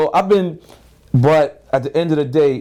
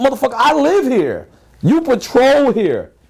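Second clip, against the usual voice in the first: defiant manner. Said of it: "I wanted to be like".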